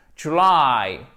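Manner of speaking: "July" with stressed, lengthened second syllable "-ly". Pronunciation tip on dragging out the word's end: stress on drawn-out second syllable of July. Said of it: "vous faites traîner la fin du mot puisque l'accentuation, elle se trouve sur cette seconde syllabe".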